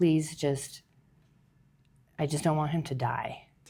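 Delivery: acted, put-on crying, tearful pleading voice. Speaker recalling how they cried and prayed to God, retelling a crying plea. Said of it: "I remember crying and saying to God".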